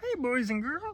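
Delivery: very high puppet-frog voice. Retelling what they said, doing a Kermit the Frog voice. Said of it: "It's still Kermit the Frog".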